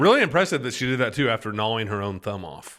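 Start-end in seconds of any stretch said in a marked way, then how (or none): none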